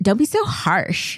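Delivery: put-on California Valley girl accent. Recalling what she used to say about slang, in a Valley girl accent. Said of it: "did you say it with that accent?".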